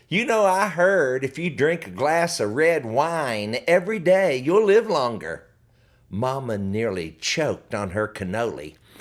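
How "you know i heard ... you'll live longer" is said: ordinary delivery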